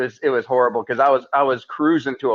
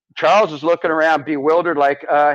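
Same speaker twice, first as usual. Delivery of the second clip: plain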